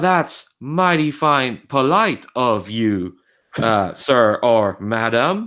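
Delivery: robotic electronic voice. Retelling a caravan answering travelers at a gas station, in an electronic speaker voice. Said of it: "you hear this electronic voice going".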